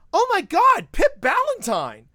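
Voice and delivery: very loud, very high, swooping, drawn-out full-lung shout. Retelling how someone in a breezeway suddenly called out: imitating a shout at the top of lungs. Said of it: "shouts at the top of their lungs".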